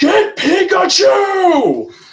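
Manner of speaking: very high, shrill, acted-out scream. Telling how the man in character pointed at him, retelling a scream. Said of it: "he just screams".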